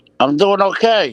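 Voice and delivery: talking through a mouthful of food, loud and high. Answering how they are doing, talking with mouth full. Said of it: "I got chicken cutlet hanging out of my mouth".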